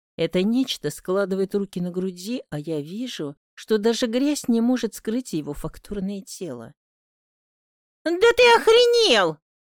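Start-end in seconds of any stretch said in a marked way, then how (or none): 8.1-9.3 very high, shrill, loud shout. A woman asking to use a man's phone shouts at his demand for something in return. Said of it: "выкрикиваю".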